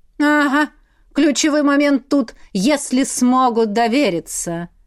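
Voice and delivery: sarcastic, caustic, drawn-out drawl. Narrator reads the demon's reply, a caustic drawl. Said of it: "язвительно протянул демон".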